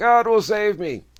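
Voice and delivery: high, loud, rising stubborn yell. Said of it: "he yells up to the helicopter".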